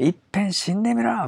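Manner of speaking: rough, harsh, high-pitched cutting voice.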